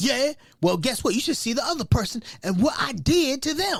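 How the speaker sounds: sharp, snappy, acted-out snapped-back tone. Retelling how she answered a question about a bruise: imitating her snapping. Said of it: "she snaps at me like".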